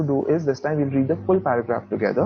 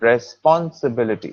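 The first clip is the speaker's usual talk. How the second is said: responsibility with pon stressed; 2 semitones lower than usual. Pronunciation lesson going word by word: stress on pon in responsibility. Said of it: "your stress over here is on pon".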